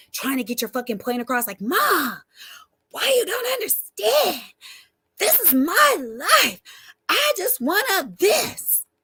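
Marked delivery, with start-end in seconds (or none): 1.6-8.8 put-on very high, very slow, swooping, drawn-out yell. Acting out arguing with mom to get a point across: imitating yelling at mom. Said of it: "Aren't you always yelling".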